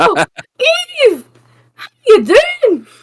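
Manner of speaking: put-on thick, broad Scottish accent, very high-pitched character voice. Greeting Eve as a character met at a party: McGonagall voice. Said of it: "I've got to do my McGonagall".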